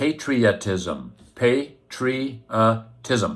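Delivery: patriotism pronounced slowly and carefully, drawn out.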